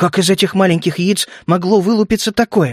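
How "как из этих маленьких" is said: plain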